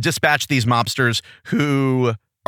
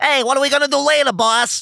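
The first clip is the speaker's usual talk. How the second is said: very high, nasal gangster sidekick voice; 10 semitones higher than usual. Discussing a cast's gangster voices, demonstrating the nasally mobster voice. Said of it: "Like the nasally one".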